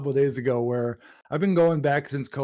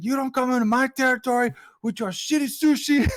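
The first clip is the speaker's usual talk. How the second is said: put-on high furious yelling fit, loud; 11 semitones higher than usual. Retelling a man yelling at a Japanese man opening a steakhouse in his town, retelling a yell. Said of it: "And he's fucking yelling at him".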